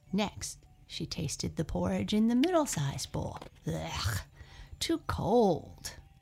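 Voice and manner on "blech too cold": sputtering, spluttering outburst. Goldilocks tastes the porridge in the middle-sized bowl, spluttering. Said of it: "she spluttered".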